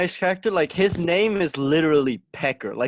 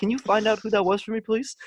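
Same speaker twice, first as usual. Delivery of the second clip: high-pitched, sweetly polite voice. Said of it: "he's like".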